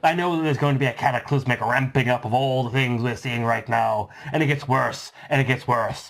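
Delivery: put-on pirate voice. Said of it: "I'll put it in my best [name] voice".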